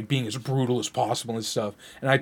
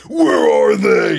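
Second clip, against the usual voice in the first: very deep, very loud barking goon voice; 8 semitones lower, 13 dB louder than usual. Recounting a movie scene, imitating a character who sounds like a goon. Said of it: "sounds like a friggin goon".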